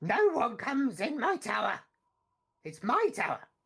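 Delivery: high, insistent, small goblin creature voice. Voicing a goblin in a shared scene, goblin voice.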